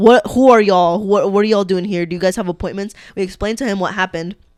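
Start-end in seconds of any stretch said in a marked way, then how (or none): 0.0-2.9 mock rude, nasty tone, louder. Retelling what the DMV worker said: imitating a rude, nasty attitude. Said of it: "nasty attitude".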